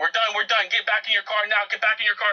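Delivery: acted, high-pitched screaming. Retelling how the guy with the glasses started screaming orders, imitating someone screaming. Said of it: "He starts screaming".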